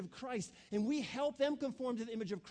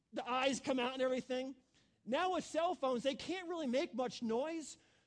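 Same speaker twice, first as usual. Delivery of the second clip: ordinary delivery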